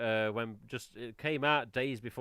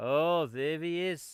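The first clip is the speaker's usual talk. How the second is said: clumsy, poor put-on Welsh accent; 4 semitones higher than usual. Quoting a neighbour's greeting when they meet, in an attempted Welsh accent. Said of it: "I can't do a Welsh accent".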